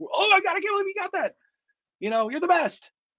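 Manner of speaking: play-acted manic cheering, very high excited scream. Describing the reaction when someone gets everything right: retelling own excited screaming. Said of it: "I'm screaming. I'm, I'm a maniac".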